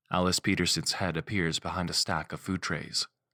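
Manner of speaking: ordinary delivery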